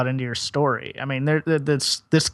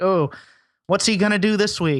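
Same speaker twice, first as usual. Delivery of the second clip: ordinary delivery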